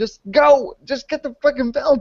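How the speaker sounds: high, urgent put-on cheering. Retelling watching a ladder match on stream: retelling screaming at the TV. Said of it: "I was screaming at my T V".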